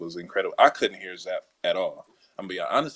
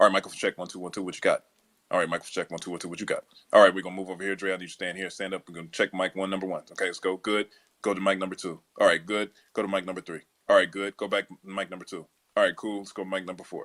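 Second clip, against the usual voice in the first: ordinary talk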